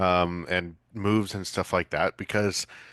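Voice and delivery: ordinary talk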